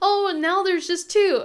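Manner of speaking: high, loud surprised exclamation.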